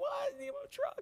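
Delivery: mock very high, tearful, crying little boy voice. Retelling a four-year-old boy answering his father: imitating a crying child. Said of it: "And he's crying".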